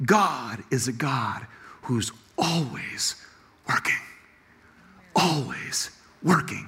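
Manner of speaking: soft, slow, hushed whisper with reverent emphasis.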